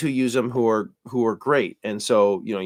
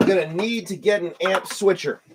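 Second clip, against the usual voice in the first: frustrated, raised, high-pitched yelling; 8 semitones higher than usual. Struggling with a gear setup, yelling at the listener. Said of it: "I'm just yelling at you now".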